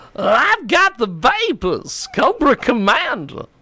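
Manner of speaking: very high, sing-song, swooping Southern accent. Showing how your impression comes out, do a Southern-sounding Cobra Commander impression. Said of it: "My Cobra Commander impression sounds Southern".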